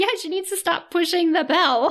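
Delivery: mock high voice.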